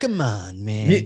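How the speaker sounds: put-on old-time movie tough-guy villain voice. Mocking how a film's villain talked, imitating a 1920s movie bad guy. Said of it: "he sounded like he was trying to do like the bad guys from like the 20s".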